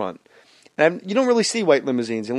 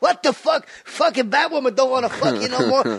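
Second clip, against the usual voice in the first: very high-pitched, intense outburst; 11 semitones higher than usual. Retelling a stand-up set, doing Joe Pesci as Robin scolding Batman: Joe Pesci impression. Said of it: "I'm doing Joe Pesci".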